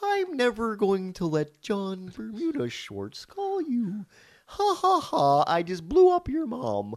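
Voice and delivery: very high, slow, swooping, drawn-out evil voice. Answering a request to voice the musician as a comedian being evil: Emo Phillips being evil. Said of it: "make him sound like he's Emo Phillips being evil".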